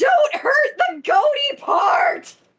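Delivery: very high, drawn-out, slow wailing scream. Voicing a character during a monster's fire attack: screaming in character. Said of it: "you hear Bob screaming".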